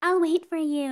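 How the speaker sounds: very high-pitched, tiny, breathy little voice. Imitating the anime girl who waits for the dude, in a little breathy voice. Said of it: "in like her little itty-bitty like breathy voice".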